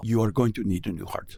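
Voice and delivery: put-on Indian accent. Quoting the man who ran a test on him, indian accent impression. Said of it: "he was talking like this".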